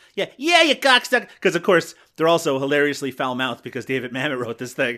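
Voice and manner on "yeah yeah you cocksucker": very high, loud, exaggerated old-timey New York accent. Mocking the child actors' accents in a period film: bad old-timey New York accent. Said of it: "The worst kind of old-timey accent in New York".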